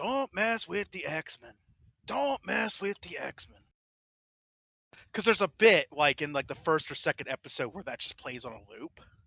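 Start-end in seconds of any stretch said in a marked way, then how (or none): 0.0-3.6 really bad, high-pitched Cajun accent. Imitating a friend's Gambit impression: really bad Cajun accent. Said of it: "in a really bad Cajun accent".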